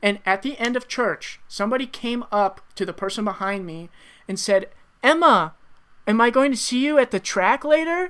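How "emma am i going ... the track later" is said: put-on high, raised young girl's voice, British accent. Retelling what someone said to a girl at church: young girl's British accent. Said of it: "really good young, uh, girl's British accent".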